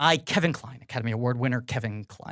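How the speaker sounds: theatrical, spotless diction, low and soft, grand. Getting the door, the speaker claims to be an Academy Award winner; theatrical Kevin Kline impression. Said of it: "Don't you recognize my voice, my very clean diction? Theatrical yet grounded".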